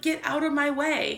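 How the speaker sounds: usual speaking voice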